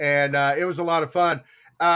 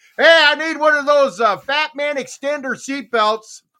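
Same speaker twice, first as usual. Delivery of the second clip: booming, loud, pitched-up, attention-grabbing announcer-style call; 9 semitones higher, 6 dB louder than usual. Retelling walking onto a crowded plane past the stewardess: retelling saying it as loud as possible. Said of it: "I say it just as loud as I can".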